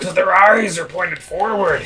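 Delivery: put-on orc-like growling voice. Joking during play, attempting a Randy Savage voice sounding like an orc. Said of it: "That sounded more like your orc voice".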